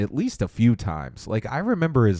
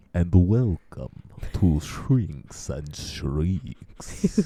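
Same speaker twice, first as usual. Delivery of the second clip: spooky, creepy voice, lower pitch; 4 semitones lower than usual. Opening a Halloween special, joking: creepy voice. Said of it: "I could make it creepy".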